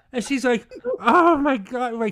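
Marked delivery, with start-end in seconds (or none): 1.0-2.0 put-on tearful crying through the words, raised voice. Retelling her reaction after being hit in the head: imitating someone crying. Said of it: "she's crying now".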